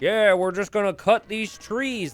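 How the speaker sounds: put-on high, odd, weird southern uncle-type accent. Imitating a player's plan to cut trees: Snoopy voice, weird southern uncle. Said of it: "That's the Snoopy voice now".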